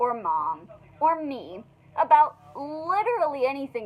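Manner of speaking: normal talking voice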